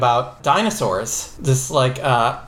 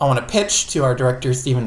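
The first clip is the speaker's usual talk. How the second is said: ordinary talk, nothing marked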